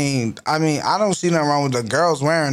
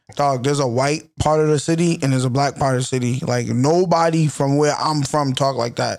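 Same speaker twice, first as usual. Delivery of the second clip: plain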